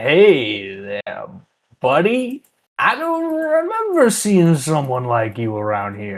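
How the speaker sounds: put-on sloppy drunken slurring with a drawn-out hey. A drunk stranger at the bar greets the listener; slurring words. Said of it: "he's slurring his words".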